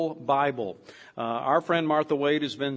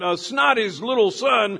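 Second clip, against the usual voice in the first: put-on high-pitched old codger voice. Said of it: "he goes".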